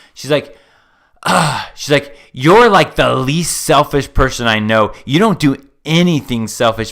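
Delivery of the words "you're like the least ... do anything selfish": put-on venomous voice. Retelling what she said to him after badgering him, imitating a venomous tone. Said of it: "she said it with this venomous tone".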